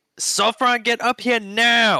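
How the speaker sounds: high, mild, half-voiced yell. Voicing a character calling a friend upstairs: yelling as loud as he can. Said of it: "And he yells as loud as he can".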